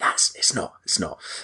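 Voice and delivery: soft whisper to oneself, dawning and let down. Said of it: "ten seconds later went".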